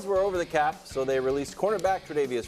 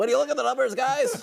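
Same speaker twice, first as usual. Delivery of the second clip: put-on nerdy voice, much higher, louder; 11 semitones higher, 5 dB louder than usual. Mocking a co-host who talks salary cap numbers: nerdy pocket-protector voice. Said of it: "doing your little nerd uh, pocket protector voice".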